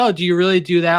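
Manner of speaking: skeptical, pessimistic tone. Retelling how a doubtful person asks about poker: imitating a pessimistic tone. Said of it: "she has a very pessimistic tone".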